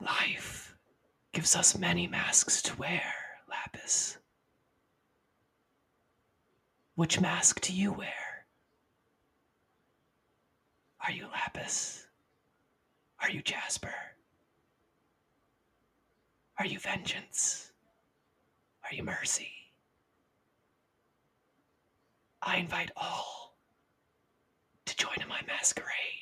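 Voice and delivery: soft, breathy whisper throughout. In darkness before a mirror, an unseen voice addresses lapis: whispering voice. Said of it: "it whispers to you".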